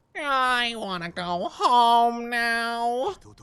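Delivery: very slow cartoon-character voice, every word drawn out. Imitating someone who sounded like Squidward: Squidward voice. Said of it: "you sounded like Squidward".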